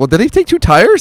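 high, loud, incredulous, amazed tone.

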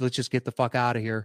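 plain

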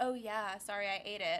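normal talking voice

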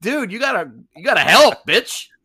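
very high, very loud shriek. Retelling a film's mountain-climbing scene: Berenger impression. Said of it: "And Berenger's like".

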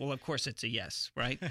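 ordinary delivery

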